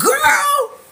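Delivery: dramatic, very high, loud, startled shriek.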